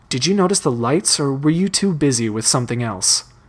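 usual speaking voice

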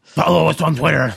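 gravelly, rough, creaky fleet admiral voice. Co-host repeats the show's sign-off after praising a voice: Admiral Ackbar voice. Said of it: "your Admiral".

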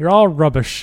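put-on British accent. Retelling a voice imagined in their head: British accent. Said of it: "a little British voice in my head go".

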